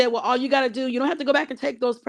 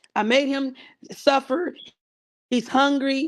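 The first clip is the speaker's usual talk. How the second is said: usual speaking voice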